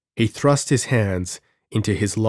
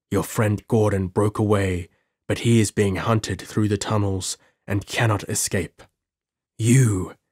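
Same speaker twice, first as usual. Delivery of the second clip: usual speaking voice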